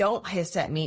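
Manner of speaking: ordinary talk, nothing marked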